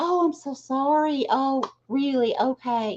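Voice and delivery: put-on nice, sympathetic tone. Recounting how they handled it, the speaker acts out saying it in a nicer way. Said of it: "I was saying it in a nicer way".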